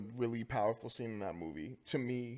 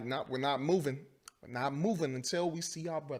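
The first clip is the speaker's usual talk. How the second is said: stern, firm, severe tone; 3 semitones higher than usual. Retelling a movie scene where he talks to a cop: imitating stern talking. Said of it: "he's all stern talking to that cop".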